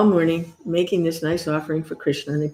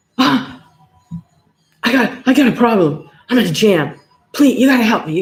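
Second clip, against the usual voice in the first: mock crying plea, higher, slower; 4 semitones higher, 3 dB louder than usual. Retelling how a devotee facing jail came running for help, imitating a crying devotee. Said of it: "And he's like crying".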